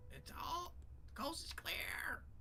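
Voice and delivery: high, yelled goblin voice.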